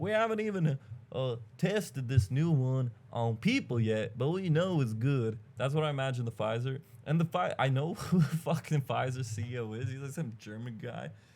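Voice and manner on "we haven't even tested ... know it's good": put-on American Southern accent, pitchman style. Imagining drug company people pushing boosters, in a put-on southern accent. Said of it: "I don't know why they have a southern accent".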